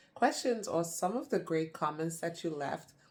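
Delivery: normal talking voice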